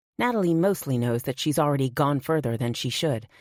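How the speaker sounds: ordinary delivery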